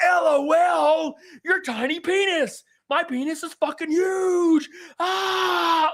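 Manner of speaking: play-acted top-of-lungs scream, very high, very slow, shrill. Mocking a rival's rant, imitating screaming at top of lungs. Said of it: "screaming at the top of his lungs".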